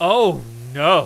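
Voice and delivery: very loud, full-voiced outcry. Retelling flames shooting up from the burner early Sunday, retelling a very loud cry. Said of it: "in a very loud voice".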